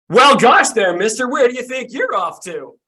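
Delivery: bursting, very high, very loud snowman holler. Voicing a snowman who suddenly speaks to a traveler: snowman character voice. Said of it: "you hear a voice explode from the snow".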